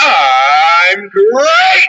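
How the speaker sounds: big, stretched-out cereal mascot character delivery. Explaining how to answer when asked how you're feeling, the speaker uses Tony the Tiger voice. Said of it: "I want to hear Tony the Tiger".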